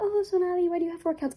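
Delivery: high, mock, nosy prying voice.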